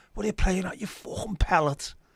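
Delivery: very high-pitched Liverpool accent. Showing how a favourite insult sounds: Scouse accent. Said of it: "really good in the Scouse accent".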